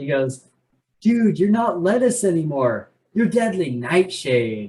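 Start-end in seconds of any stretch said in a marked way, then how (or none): 1.0-4.7 laid-back stoner surfer voice. Recounting a narrator's line, the speaker quotes it in Tiger's stoner surfer voice. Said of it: "in like Tiger's like stoner surfer voice".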